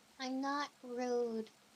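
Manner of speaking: cute, adorable anime-character voice. Answering a claim of being rude, sounding like an anime character. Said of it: "you just sounded like an anime character there".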